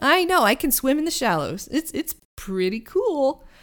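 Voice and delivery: goofy high eager voice. The party's talking boat answers Penny about swimming in the shallows: goofy Herman voice. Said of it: "And you hear the familiar goofy voice of [name] just echoing up the bluffs. / And you hear the familiar goofy voice of [name] just echoing up the bluffs. [name] immediately eyes wide and goes, I forgo".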